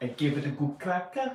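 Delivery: put-on Italian accent. Repeating a line for a laugh in a put-on Italian accent. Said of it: "That's, that's Italian".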